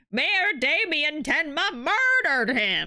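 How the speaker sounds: put-on elderly man voice. Reading a judge's opening statement in a game: old man voice. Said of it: "my old man voice is dying".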